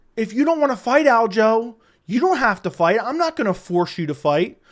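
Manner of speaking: mock, condescending, patronizing talking-down tone. Repeating a clip's words back to the audience: imitating Hunter Campbell's condescending tone. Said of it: "Listen to that condescending tone".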